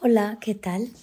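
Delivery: tired, faint, thin, high little voice. Answering the host's greeting on air in a faint thin voice. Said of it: "Con un hilito de voz que tienes".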